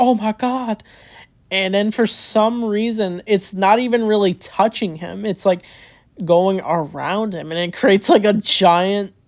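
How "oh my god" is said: mock, high, mild, small, contained scream. Retelling a game scene where pinballs attack him, imitating him screaming. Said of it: "he's like screaming like".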